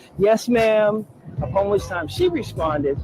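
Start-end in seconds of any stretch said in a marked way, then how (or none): 0.2-1.1 put-on raised, childlike voice like a twelve-year-old. Speaker recounting answering a woman who scolded them from a window: retelling a childlike reply. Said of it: "revert to like this twelve-year-old".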